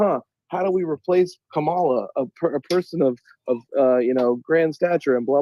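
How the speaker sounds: ordinary delivery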